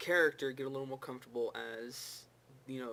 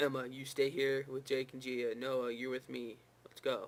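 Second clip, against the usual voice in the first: mock flat monotone, no emotion. Speaker mimicking how a show character delivers his line: imitating a monotone delivery. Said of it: "the way he delivers his line is it's so monotone".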